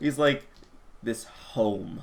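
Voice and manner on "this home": scornful, breathy half-whisper, derisive home. Voicing a guard at a doorway: saying home derisively. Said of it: "he says home almost derisively".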